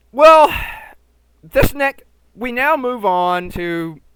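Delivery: stumbling over words. Moving on to the next part of a film rundown, stammering. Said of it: "Sorry, I'm stammering".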